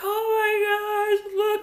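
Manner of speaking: mock crying, high drawn-out bawling, "oh" stretched. Retelling being in the bathroom with a hurt nose, imitating own bawling. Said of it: "I'm bawling".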